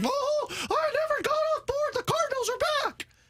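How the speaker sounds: tiny, very high-pitched cartoonish voice. Imitating someone's predicted Monday reaction: Gingerbread Man voice from Shrek. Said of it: "Was that a Mickey voice?".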